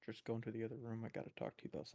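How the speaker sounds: speaking in a whisper. Speaking in character, asking another character to step aside: whispering. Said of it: "I sit on his shoulder and I whisper".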